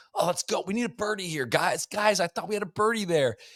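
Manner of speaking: gooberish, very high, played-up golfer voice. Imitating a golfer talking to camera like a YouTube golfer. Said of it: "an impression of a YouTube golfer".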